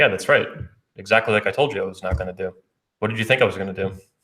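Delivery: put-on bone-dry, flat, matter-of-fact deadpan delivery. Retelling a reply to a partner who complained: retelling own deadpan reply. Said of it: "I just looked at her deadpan".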